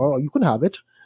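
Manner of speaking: put-on offhand tech-billionaire voice. Acting out asking Elon Musk for money: Elon Musk impression. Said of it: "that's my impression of him".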